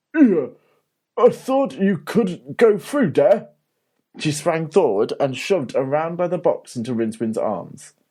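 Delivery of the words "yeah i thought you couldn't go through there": thick troll voice, raised and calling out. Narrator reading a troll calling down from the top of the stairs, thick troll voice. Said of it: "came the thick trolley's voice".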